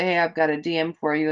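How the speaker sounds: plain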